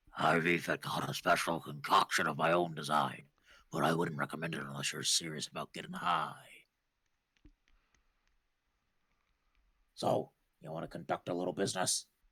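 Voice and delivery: hushed, secretive, conspiratorial whisper, dropped far low. Zach leans toward the player's character and speaks in a conspiratorial whisper. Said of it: "lowers his voice to a conspiratorial whisper".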